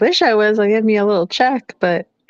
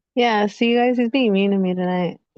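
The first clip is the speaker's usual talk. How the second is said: usual speaking voice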